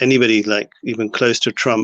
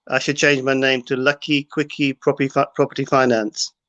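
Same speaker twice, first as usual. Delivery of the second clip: ordinary talk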